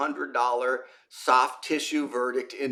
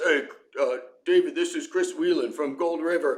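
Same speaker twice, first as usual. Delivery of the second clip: easy, casual, everyday normal voice. Retelling a phone call from Chris: imitating Chris's deep booming voice. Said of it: "this really deep, booming voice".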